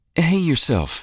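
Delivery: breezy, light, very high, a bit weary, faintly exasperated. Narrator reading Deitra answering Carson's phone call, light, slightly exasperated. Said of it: "her tone light, but with a hint of exasperation".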